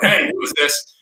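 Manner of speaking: rough, gruff tone. Recalling calling John for the first time, quoting his answer: imitating John's gruff voice. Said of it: "this gruff voice has like".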